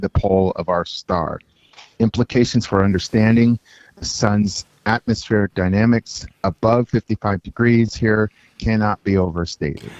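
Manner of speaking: ordinary delivery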